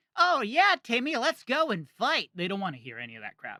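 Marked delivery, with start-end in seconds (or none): 0.2-2.3 crazy, very high, slow cartoon voice. Voice actor showing the demo voice clients don't want, crazy cartoony voice. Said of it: "that was a great voice".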